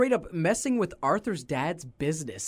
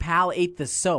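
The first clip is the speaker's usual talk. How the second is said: normal talking voice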